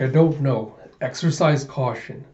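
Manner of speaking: normal talking voice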